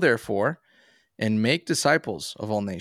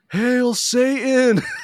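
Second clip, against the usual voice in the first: very high, shrill, loud yell; 14 semitones higher, 6 dB louder than usual. Telling how a man in a passing car yelled at them, retelling a yell. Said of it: "and he yells".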